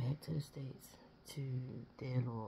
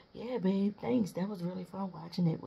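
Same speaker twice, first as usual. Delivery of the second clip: sarcastic, pitched-up, put-down tone; 6 semitones higher, 5 dB louder than usual. Describing a woman after the fireworks, act out her sarcastic remark to him. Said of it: "be sarcastic and say".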